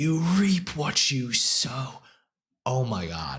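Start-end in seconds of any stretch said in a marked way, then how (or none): 0.0-1.9 slow, dramatic, high, drawn-out acted scream. Recapping the Proctor scene with a friend, retelling someone screaming. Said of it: "And you screaming".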